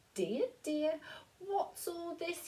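very high-pitched, kindly spoken voice. Narrator reading Mr McNally, an old friend, at the bedroom door; very kind voice. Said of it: "he said in a very kind voice".

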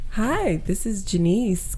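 put-on polite, customer-service-style phone voice. Acting out answering a call at work, in a work phone voice. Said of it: "do your work voice".

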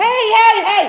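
shrill, very high, very loud yelling shout. Breaking off mid-talk to yell at George, who is attacking the cat. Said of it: "I'm so sorry for yelling".

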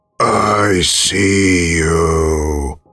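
very hoarse, rasping voice. Reading a horror story, voicing a recorded stranger: very hoarse voice. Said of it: "a very hoarse voice saying".

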